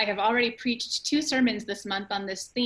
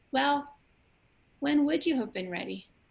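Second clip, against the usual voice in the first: put-on high, small six-year-old child's voice; 5 semitones higher than usual. Retelling a six-year-old son's question to a crying woman, in his little six-year-old voice. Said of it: "in his little six year old voice".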